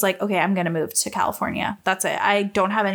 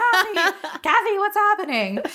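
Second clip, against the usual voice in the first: very high, freaked-out yelling; 11 semitones higher than usual. Acting out a man yelling through the bathroom door at a woman, retelling a yell. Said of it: "yelling through the door".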